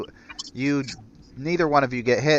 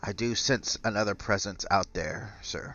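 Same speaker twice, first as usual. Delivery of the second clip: low-key, soft, hushed whisper; 2 semitones lower, 6 dB quieter than usual. Game master voices the doctor turning to a player character, whispering. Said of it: "he kind of whispers".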